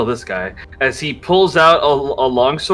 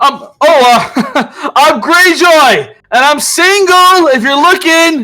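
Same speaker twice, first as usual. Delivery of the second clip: very high, called-out, raised yell; 13 semitones higher, 7 dB louder than usual. In a game scene across a canyon, a player does Greyjoy yelling out. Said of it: "Greyjoy just yells out".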